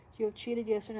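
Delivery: ordinary delivery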